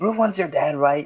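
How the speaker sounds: speaking in a whisper. Asking another character in a whisper: whispering. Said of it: "I'm gonna whisper".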